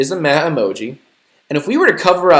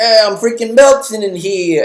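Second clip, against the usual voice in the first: put-on cartoonish New York accent, pitched up; 7 semitones higher, 4 dB louder than usual. Recounting a little ice cream character's line from a movie teaser, in a New York accent. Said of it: "he has like this New York accent".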